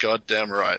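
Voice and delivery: ordinary talk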